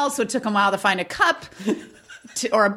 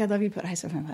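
put-on whisper, lower and quieter; 7 semitones lower, 8 dB quieter than usual. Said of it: "Why is she whispering?".

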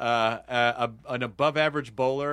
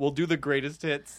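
ordinary talk, nothing marked

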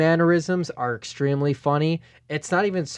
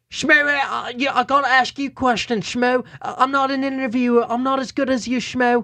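put-on UK accent, pitched much higher; 9 semitones higher than usual. Retelling an interview with Schmo, doing a Bisping UK accent impression. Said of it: "let me see if I can do his UK accents".

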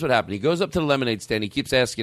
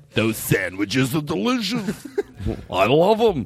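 exaggerated put-on deep voice, much slower; 3 semitones higher than usual. Demonstrating how to do a voice, as deep a voice as possible. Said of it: "you go as deep as you can get".

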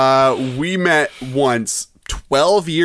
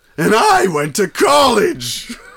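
high, swooping, sing-song cartoonish voice; 8 semitones higher than usual. Asked by another speaker to do Plankton: Plankton voice. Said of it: "what about Plankton?".

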